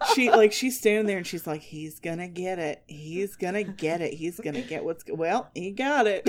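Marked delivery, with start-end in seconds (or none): 1.6-6.3 delightful, slow, drawn-out, put-on Midwestern accent. Retelling how a filming bystander narrated a fight: imitating a Midwestern accent. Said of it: "a woman with a delightful Midwestern accent".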